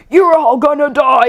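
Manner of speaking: eerie, sinister, creepy, possessed-sounding voice. Retelling a movie scene where a possessed character speaks: retelling a creepy voice. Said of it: "a creepy voice".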